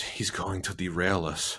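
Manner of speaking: mock excited whispering. Retelling a film character's line on a train: imitating an excited whisper. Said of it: "she gets really excited and she whispers".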